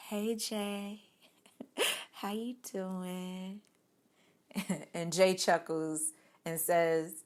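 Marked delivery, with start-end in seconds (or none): 0.0-3.6 hushed, very soft, slow, gentle feminine voice. Retelling a greeting to jay: soft feminine voice. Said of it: "in my soft feminine voice".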